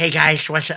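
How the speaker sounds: geeky, nerdy voice that sounds really bad. Imitating the host of a UFO video channel: nerdy Secure Team 10 voice. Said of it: "his voice is so nerdy".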